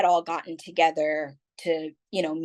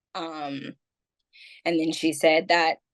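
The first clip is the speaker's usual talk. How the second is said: ordinary delivery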